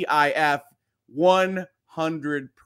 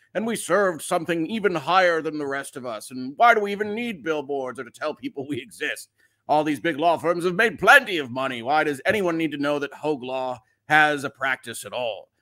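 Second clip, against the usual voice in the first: put-on old, senior elderly character voice. Showing how an old law-firm partner talks, in an old partner voice. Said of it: "That's my old partner voice".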